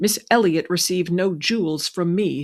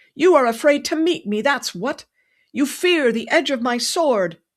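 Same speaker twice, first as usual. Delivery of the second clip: high, raised, loud yell; 8 semitones higher, 3 dB louder than usual. Reading a story aloud, a character calling after a departing rider: yelling. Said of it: "he yelled down the avenue".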